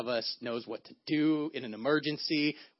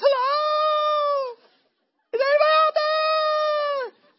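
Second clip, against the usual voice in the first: very high, very slow, drawn-out yell; 10 dB louder than usual. Retelling being lost on a high rock: retelling a scream for help. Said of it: "some screaming happened from this rock".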